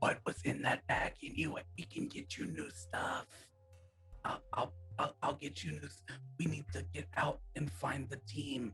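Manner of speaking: whispering. During a tabletop game, speaker's character tries to whisper to him. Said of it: "trying to whisper to him".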